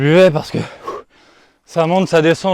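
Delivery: out of breath. Describing their round of golf, out of breath. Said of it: "je suis essoufflé".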